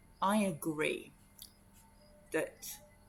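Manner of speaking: secretive, hushed, conspiratorial half-whisper. Retelling how someone leaned in and secretly agreed with them, in a conspiratorial half-whisper. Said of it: "in a sort of almost conspiratorial whisper".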